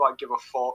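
ordinary talk

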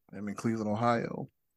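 playful joking mock whisper. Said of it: "I better whisper".

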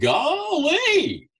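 very high, goofy Southern "Golly", drawn out. Retelling childhood mimicking of a Southern goofy TV character: Gomer Pyle impression. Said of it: "he played this kind of Southern goofy character".

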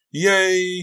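joyful exclamation. In the snow, hearing they're getting out, the narrator cries out happily. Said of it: "I cried happily".

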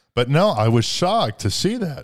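voice breaking mid-sentence. Talking in a conversation, voice cracking. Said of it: "my voice cracked again".

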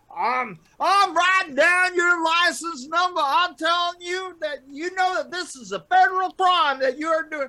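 very high, loud, blustering Southern drawl. Retelling what a man said as you drove away, Foghorn Leghorn voice. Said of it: "you sound exactly like Foghorn Leghorn".

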